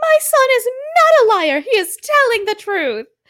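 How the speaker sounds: very high, shrill, frantic, freaking-out defensive insistence. Retelling a mother whose son is being questioned, imitating her freaking out. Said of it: "the mom is freaking out like".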